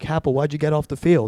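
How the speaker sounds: ordinary talk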